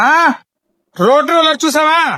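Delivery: high-pitched yelling like a howling dog. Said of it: "ఎందుకు అలా అరుస్తావు".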